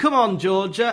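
broad Lancashire accent, laid on thick, put-on. Recalling a player's dad in the crowd at a cup final, thick Lancastrian accent. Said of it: "in a thick Lancastrian accent".

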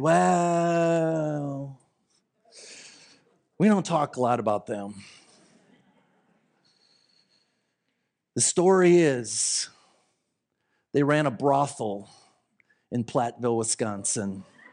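hushed low voice. Retelling what a dad said about the couple: imitating a quieter, lowered voice. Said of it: "Voice kind of dropped a little bit in tone".

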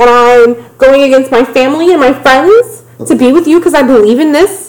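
high-pitched, guilt-tripping pleading tone. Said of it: "laying that guilt trip on thick".

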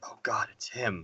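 barely audible, very quiet, hushed whisper. Retelling how a film character says the line: imitating a whispered line. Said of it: "whispers it".

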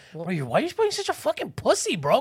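mock angry scolding. Acting out what they would say to the man who slapped someone: angry scolding. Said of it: "I was so angry".

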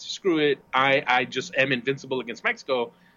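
plain

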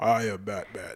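deep, husky hero growl. Talking about the animated Batman's actor, demonstrate the character in a smoky, growling Batman voice. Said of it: "smoky voice growl kind of thing".

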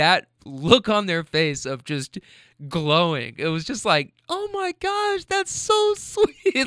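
half crying, half laughing, swooping voice. Speaker moved by the reaction they gave someone, half crying, half laughing. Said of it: "I'm like half crying, half laughing right now".

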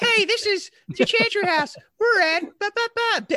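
put-on very high-pitched, loud, childish kid voice. Recalling recording an answering machine message as kids, high-pitched kid voice. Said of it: "high pitched voice".

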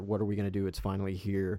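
ordinary talk

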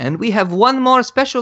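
clumsy mock French accent. Imagining how Yves Guillemot would do it, speak as Yves Guillemot in a terrible French accent. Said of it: "that's a terrible French accent".

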